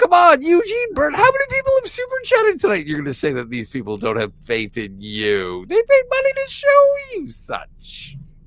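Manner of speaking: very high-pitched, swooping, sing-song talk. Teasing another speaker about super chats, high-pitched voice. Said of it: "I'm sorry for being so high-pitched".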